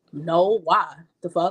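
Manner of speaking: rude, slow, dismissive delivery. Acting out someone's reply when asked about the game: imitating a rude, dismissive reply. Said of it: "just the way you say things to me".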